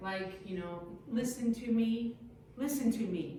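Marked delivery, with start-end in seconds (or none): none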